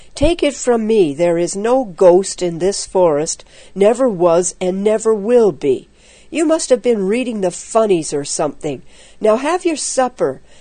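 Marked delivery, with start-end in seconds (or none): none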